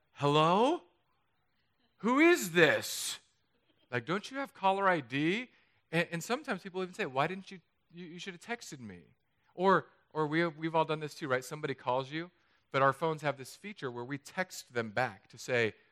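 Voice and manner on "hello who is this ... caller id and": put-on slow, furious, angry dragon-like beast voice. Speaker acts out answering an unknown caller, like an angry dragon beast. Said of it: "like i'm some angry dragon beast".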